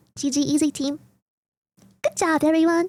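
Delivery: cute, cutesy uwu-style voice. Retelling what they said to their team in the game lobby: uwu voice. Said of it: "in my in my my best Ubu voice ever".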